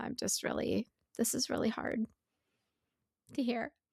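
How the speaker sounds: on the verge of tears. Responding to talk of children and trauma, holding back tears. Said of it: "I am really struggling not to start tearing up".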